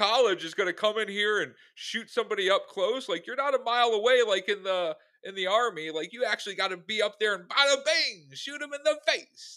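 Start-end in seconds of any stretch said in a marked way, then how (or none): 3.3-9.6 terrible over-the-top Italian accent, high-pitched and loud. Mid-conversation, slipping into a terrible Italian accent. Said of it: "That was my terrible Italian accent".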